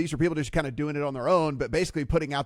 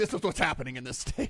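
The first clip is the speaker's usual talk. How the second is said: forceful, firm tone, sounding final; 6 dB quieter than usual. Imitating the lieutenant governor slamming the hammer down: imitating Dan Patrick laying down the law. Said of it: "slams the hammer down".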